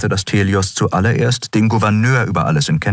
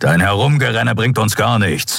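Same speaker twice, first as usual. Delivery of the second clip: huffing, snorting, much higher; 3 semitones higher than usual. Narrator reads a character telling a pacing companion to sit down, snorting. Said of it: "schnaubte Keru".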